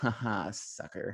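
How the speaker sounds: soft, muttered under the breath. Acting out a sneaky aside after a podcast invite: mock muttering under breath. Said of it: "under my breath".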